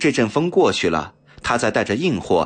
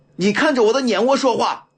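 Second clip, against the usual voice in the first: stern, harsh, barked shout, very high; 12 semitones higher than usual. A man confronts another who is feigning confusion; sternly shouting. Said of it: "梁先生厉声喝道".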